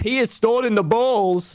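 put-on with a Norwegian accent. Speaker retelling what Fundy said to friends, in Fundy's Norwegian accent. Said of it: "He goes in his Norwegian accent".

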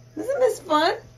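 loud, high delighted exclamation.

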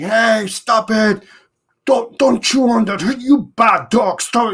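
high-pitched scolding shout. Showing how dog owners yell at a dog chewing sticks: yelling at a dog. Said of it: "instead of me yelling at my dog and saying".

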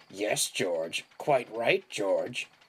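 growling voice with a mocking edge. Narrating, the steamroller speaks to George; growling mockingly. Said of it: "the steamroller growled mockingly".

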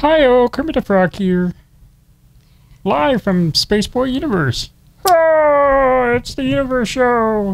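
"Oh" pitched very high and stretched. Answering a would-you-rather question by acting it out: Kermit the Frog voice. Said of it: "I would rather sound like Kermit".

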